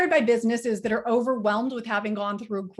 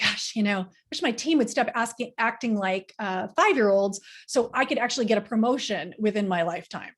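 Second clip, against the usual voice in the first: ordinary delivery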